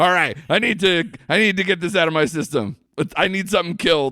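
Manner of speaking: high, mock fed-up, had-enough exasperated voice. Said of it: "and just being like".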